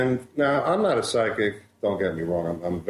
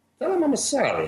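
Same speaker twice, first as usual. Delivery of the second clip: put-on very high-pitched, very Italian accent. Retelling a man's message heard in the speaker's head, put-on italian accent. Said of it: "I'll have to do the accent. He was very Italian".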